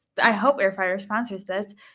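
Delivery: ordinary talk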